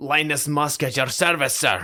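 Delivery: put-on Scottish accent. Quoting the Scottish sergeant character they both loved, in Linus Musk Scottish accent. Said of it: "show off my Scottish accent".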